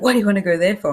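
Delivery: put-on indignant angry voice. Retelling a trip, the speaker quotes the guide's reply, imitating an angry tour guide. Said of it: "the tour guide was really angry".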